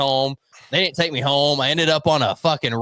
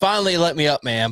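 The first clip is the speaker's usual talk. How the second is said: usual speaking voice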